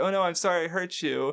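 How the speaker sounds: mock broken Japanese-accented English. Describing a Japanese voice actor apologizing in a scene: imitating broken Japanese. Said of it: "pretending to do broken Japanese".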